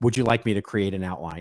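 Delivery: ordinary delivery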